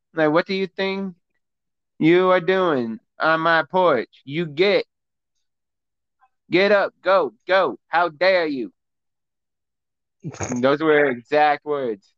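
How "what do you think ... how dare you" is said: put-on teacher voice, firm, meaning business. Retelling a woman ordering a bear off her porch, imitating a teacher voice. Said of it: "she used her teacher voice to show the bear she meant business".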